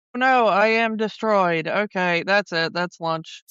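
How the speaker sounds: flat, put-on delivery. Joining in mocking a voice actor's flat villain death line: imitating Orson Welles without emotion. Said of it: "only bit of emotion we get".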